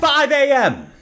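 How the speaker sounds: very high, shrill, stunned, shocked yell. At a claw machine event, shocked by the arrival time, shouting. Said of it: "I should stop shouting".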